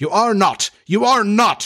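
rasping, hoarse, high cry. Narrator reads the captain denying a strange voice's claim, crying out hoarsely. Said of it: "Hook cried hoarsely".

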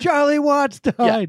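very high, shrill, yelled-out shout. Joking about hearing of a drummer's death: mock yelling. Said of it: "You're not yelling out".

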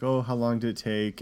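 ordinary talk

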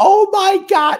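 put-on shrill, very high, thrilled shriek. Retelling how a woman reacted on seeing the speaker's brother, retelling a scream. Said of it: "she screams".

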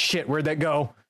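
high, frantic, alarmed, panicked blurt. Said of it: "could you imagine the panic in your voice?".

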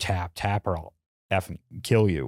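half-whisper, very close, as into the ear. Retelling what she half-whispered in the ear: imitating a half-whisper. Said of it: "her whisper in my ear".

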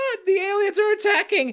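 very high, limp, uncommitted, half-hearted scream. Retelling a cartoon woman's scream that didn't want to wake neighbors: imitating a half-hearted quiet scream. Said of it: "And then she's like".

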